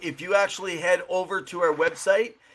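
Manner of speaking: ordinary talk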